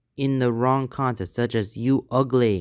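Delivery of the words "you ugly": ordinary talk, nothing marked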